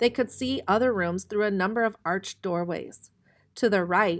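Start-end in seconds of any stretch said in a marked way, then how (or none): none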